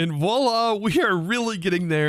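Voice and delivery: excitement audible in the voice. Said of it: "you can hear it in the excitement in my voice".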